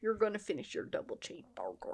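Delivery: put-on Southern accent. Joking with friends about leftovers, imitating someone: put-on Southern accent. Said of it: "this accent you're doing".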